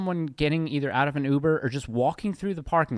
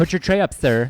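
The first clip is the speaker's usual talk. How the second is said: put-on mean, rude flight attendant voice, louder; 2 semitones higher, 8 dB louder than usual. Complaining that flight attendants got mean, imitating a mean flight attendant. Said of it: "Flight attendant".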